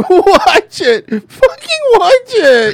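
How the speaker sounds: mock very high, shrill, very loud sobbing. Telling how they started crying and talking after she walked away, imitating their own crying. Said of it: "And I'm crying".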